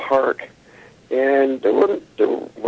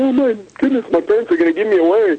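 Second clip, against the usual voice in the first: put-on frightened little-kid voice, panicked, pitched up; 8 semitones higher than usual. Recalling being a little kid while mom joked, acting out past panic. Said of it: "I'm panicking, going".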